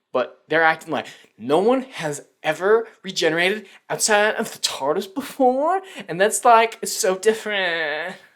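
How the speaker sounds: mocking, breathless awe, high-pitched and loud.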